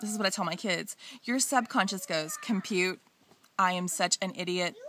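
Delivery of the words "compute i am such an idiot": computer-like, flat, monotone robot voice. A parent showing how they voice the subconscious for their kids, in a computer-like robot voice. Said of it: "I use my computer-like voice, my robot voice".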